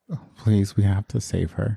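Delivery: very soft, pleading voice. Voicing a character begging the group to save someone: very soft pleading voice. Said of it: "all you hear from [name] in a very soft voice".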